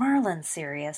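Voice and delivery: ordinary talk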